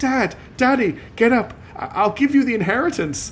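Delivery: very high, slow, heavy sobbing. Reading a story aloud, voicing Adelia shaking her father's lifeless body, sobbing. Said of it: "Sobbing and crying her eyes out".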